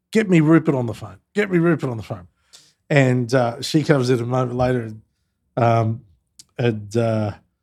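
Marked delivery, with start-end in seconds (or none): 0.1-2.2 mock calling out, imitated yelling. Retelling how the president called out to his assistant: imitating someone yelling. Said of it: "the president yells out to his P A".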